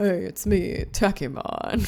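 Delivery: very slow delivery, each word drawn out. Imitating a voice line another person recorded for Takemon: imitating Takemon voice line. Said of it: "It sounds something like that".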